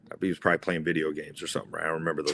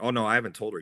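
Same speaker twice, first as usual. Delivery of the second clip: ordinary delivery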